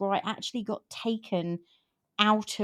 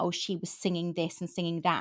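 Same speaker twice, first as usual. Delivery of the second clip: usual speaking voice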